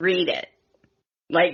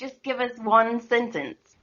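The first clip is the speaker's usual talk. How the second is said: posh English accent, pitched a bit high. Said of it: "practice doing an English accent".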